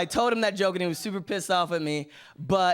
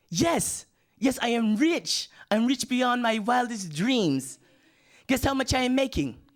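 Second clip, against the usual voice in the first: imitated voice, higher; 6 semitones higher than usual. Retelling a friend's phone call home to his mother: imitating an African friend. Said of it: "the phone call kinda went something like this".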